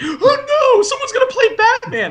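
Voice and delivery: acted, very high, freaked-out, panicked fretting. Mocking fans who get freaked out: mocking batman fans panicking.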